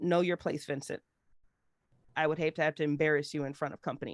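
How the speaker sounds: unruffled, ice-cold, very cool and composed tone. Narrating a scene, speaking as Rue to the gentleman: very cool. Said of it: "she says very coolly".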